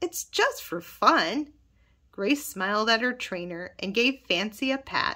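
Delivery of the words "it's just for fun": kind voice, slow, unhurried and high. Leah laughs and answers Owen, in a kind voice. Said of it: "she said in a kind voice".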